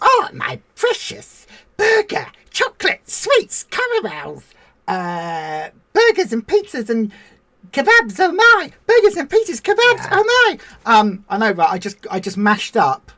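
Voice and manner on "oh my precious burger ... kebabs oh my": very high, swooping sing-song voice. Playing a creature craving junk food: Gollum voice. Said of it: "we're like Gollum going".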